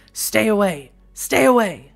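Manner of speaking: slow, menacing, bestial snarled words. Narrator reads a man leaning in through the car window at you: snarling. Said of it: "sniffs at you and snarls".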